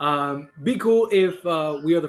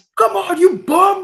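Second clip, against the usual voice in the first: shrill, very high, loud screaming yell; 8 dB louder than usual. Picturing Tyler as assistant coach, the speaker imitates him screaming at the players. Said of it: "just screaming at everybody".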